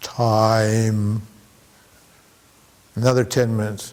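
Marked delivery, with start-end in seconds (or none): 0.0-1.2 mocking, slow, lower-pitched serene-sounding speech. Acting out an enlightened person slowly answering what time it is: mocking slow enlightened talk. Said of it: "then I wait ten minutes".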